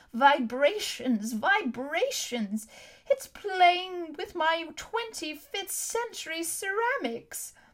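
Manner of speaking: high, reedy, sing-song whine. Narrating as two guildsmen hurry past, in Dr. Argengarth's reedy whine. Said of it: "the reedy voice of old Dr. Argengarth whine".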